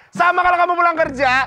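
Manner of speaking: high, loud, angry nagging.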